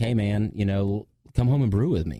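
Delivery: normal talking voice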